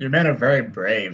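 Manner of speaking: dry, unimpressed delivery. Voicing Marie as she goes back to her seat, deadpan and unimpressed. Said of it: "just this deadpan voice".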